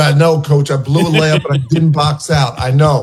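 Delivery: normal talking voice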